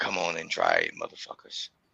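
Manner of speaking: whispered, breathy, hushed, angry tough-guy taunting tone. Speaker daring people who might object, in a put-on angry voice. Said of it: "that's my angry voice".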